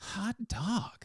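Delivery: very high, gleeful, joyful cry. Showing how to say a word of pure joy: joyful exclamation. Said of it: "a word of pure joy and exclamation. But you say it like this".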